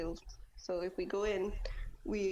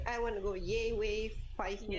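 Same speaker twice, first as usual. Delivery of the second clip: usual speaking voice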